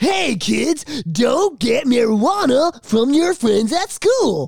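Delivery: high drawn-out cartoon voice. Mocking an old anti-drug public service ad: Michelangelo voice. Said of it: "Michelangelo from the Ninja Turtles".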